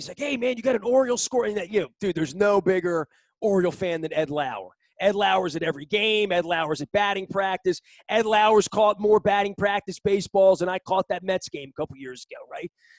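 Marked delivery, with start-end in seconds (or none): 0.2-1.5 casual, easy voice calling out from a distance. Retelling a neighbor on the roof calling down: imitating someone yelling down. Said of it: "Eddie Lauer yells down to me".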